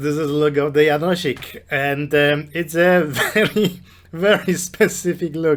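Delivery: words broken up by laughter while talking. Showing the group a video of Janosik's look, laughing while talking. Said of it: "Excuse me, I'm laughing".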